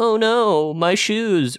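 high, very slow, bumbling incompetent voice. Discussing a book character, the speaker does an incompetent person impression. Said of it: "that was my incompetent person impression".

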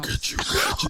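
demonic voice. Facing a rival in the finals, the player taunts them in a Satan voice. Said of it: "that's my my Satan voice".

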